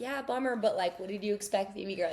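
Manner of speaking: ordinary talk, nothing marked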